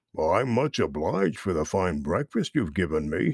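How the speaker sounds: deep, grumbly rumble, rattled off quickly. A bear speaks up to an otter who didn't see him waiting, Buster Bear's deep grumbly voice. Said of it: "said Buster in his deepest, most grumbly, rumbly voice".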